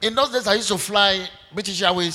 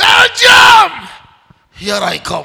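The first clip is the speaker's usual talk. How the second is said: booming, very loud, very slow, drawn-out shout; 9 semitones higher, 13 dB louder than usual. Retelling shouting country names in the house: imitating own past shouting. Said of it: "I'll begin to shout the name of country after country".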